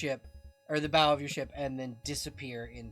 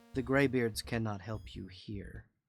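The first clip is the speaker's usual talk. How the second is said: very quiet, hushed voice, much lower; 5 semitones lower, 5 dB quieter than usual. The narrator voices a woman leaning in close to the player: very quiet. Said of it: "She leans in and very quietly says".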